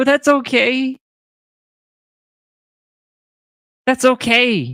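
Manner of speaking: crying while talking. Saying goodbye to viewers while live, crying while talking. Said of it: "because I'm crying".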